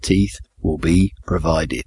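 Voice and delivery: slow, acted-out, drawn-out delivery. Retelling the pastor's answer to an elderly lady in the front row, retelling a slow reply. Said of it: "he said slowly".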